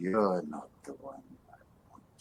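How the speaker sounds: faint, barely audible voice sounding distant, from above. A voice from the darkness above speaks to Ralph; barely audible voice. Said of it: "Could you speak up".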